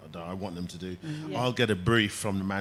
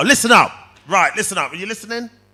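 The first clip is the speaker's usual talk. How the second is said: strong, hard, loud, high commanding coach voice; 12 semitones higher, 14 dB louder than usual. Asked for a sentence in a strong voice, retelling calling out to players. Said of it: "give me a sentence in a strong voice".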